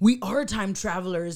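plain

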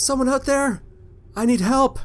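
very high, hurt and scared, frightened calling cry. A game master voicing a call from a tunnel, afraid and injured. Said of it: "another voice that you hear from one of the tunnels saying".

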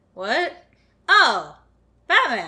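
thrilled, delighted exclamation. Voicing a scientist woken at night by Batman: delighted Professor Norbit voice. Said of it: "Like he's delighted".

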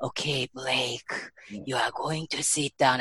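put-on guided meditation voice. Mocking a guided meditation instructor who changes voice: imitating a meditation instructor's changed voice. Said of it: "Start to talk about change voice".

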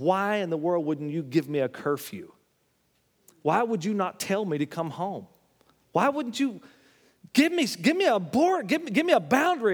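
put-on screaming girl voice, rising. Retelling a documentary where a fourteen-year-old girl screams at her mother: imitating a girl screaming at her mother. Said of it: "She's screaming at her mother".

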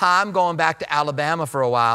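put-on Southern Alabama accent. Retelling what a woman from Alabama used to say: imitating an Alabama accent. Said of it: "I can tell when someone's from Alabama".

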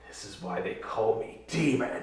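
crazed, manic, maniacal whisper, very hushed. Voicing a character holding a player in a headlock before exploding, maniacal whisper. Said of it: "as I maniacally whisper".

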